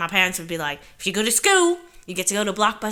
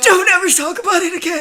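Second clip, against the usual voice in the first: shrill, very high, loud dark-wizard villain voice; 11 semitones higher, 9 dB louder than usual. Replying to someone calling a dog movie the cutest ever, Voldemort-like voice. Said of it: "Why did you just sound like uh, Voldemort?".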